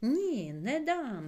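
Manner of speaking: outright yell, high and loud. Mykytka refuses to let his aunt throw the bottle away, shouting. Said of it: "закричав він".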